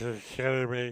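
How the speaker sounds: mock-tired delivery. Mimicking how he sounded saying it, imitating a tired voice. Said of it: "He sounded like he was getting tired".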